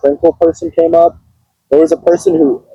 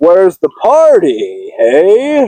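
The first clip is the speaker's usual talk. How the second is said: very slow drawl, drawn way out, swooping pitch; 2 semitones higher than usual. Retelling what a costumed guy said to the Raven, Benny from Fallout voice. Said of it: "he talks like Benny from Fallout".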